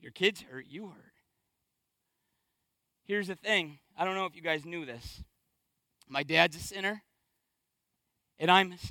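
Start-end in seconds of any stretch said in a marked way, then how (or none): 0.0-1.1 very soft, low, hushed, barely audible. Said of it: "but he said".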